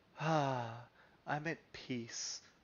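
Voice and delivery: calm, blissed-out, very slow serene drawl. Mocking another speaker's tone on a claim: imitating someone's peaceful inflection. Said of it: "that inflection in his voice when he said".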